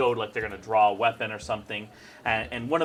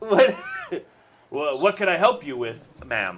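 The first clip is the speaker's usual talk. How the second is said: stumbling half-orc voice; 4 semitones higher, 4 dB louder than usual. Voicing a half-orc spice merchant who turns to a customer: half-orc merchant voice. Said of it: "he's like a, like a, a half orc".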